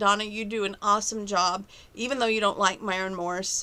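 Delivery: ordinary delivery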